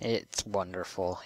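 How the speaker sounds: dry, sarcastic, tongue-in-cheek tone. Reacting to the growing backlog of craziness, sarcastic tone. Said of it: "he says with a sarcastic voice".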